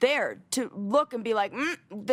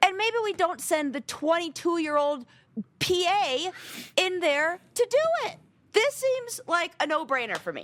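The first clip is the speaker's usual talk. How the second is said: heated, impassioned angry voice, pitched up; 6 semitones higher than usual. Show co-host making a point in a discussion, passionate, angry voice. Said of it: "now I'm using my passionate, angry voice".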